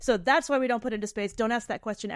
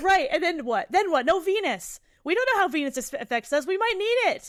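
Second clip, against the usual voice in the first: worked-up, loud, high-pitched yelling; 9 semitones higher, 5 dB louder than usual. Arguing that nuclear waste might hit Venus, yelling. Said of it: "I'm yelling".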